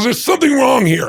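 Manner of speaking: riled-up, angry voice pitched very high. Retelling a story about a man who always wins at blackjack, imitating an angry man. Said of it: "He's getting angry".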